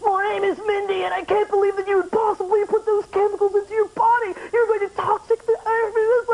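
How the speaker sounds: mocking put-on voice, high and flat.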